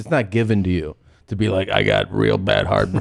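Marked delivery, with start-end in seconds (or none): 1.7-3.0 put-on granny voice, lower pitch. Quoting the granny who has heartburn: imitating a granny's voice. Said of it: "you gotta earn that voice".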